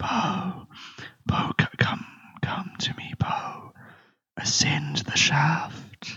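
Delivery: high-pitched, slow, eerie whisper. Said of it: "you hear the voice".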